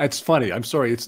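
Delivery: speaking through laughter, laughing through the words. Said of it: "but I'm laughing here".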